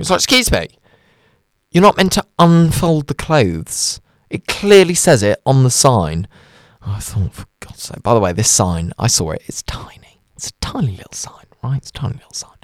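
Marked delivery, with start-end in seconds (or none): none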